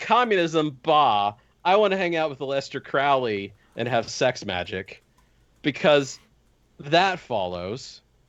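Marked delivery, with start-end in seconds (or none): none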